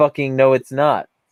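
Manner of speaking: normal talking voice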